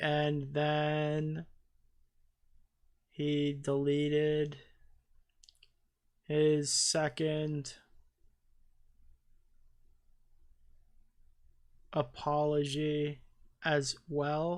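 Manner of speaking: very slow, drawn-out speech, dragging each word. Mocking how the video's narrator keeps talking slower and slower: imitating her slow talking. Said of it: "You hear her talking slower and slower".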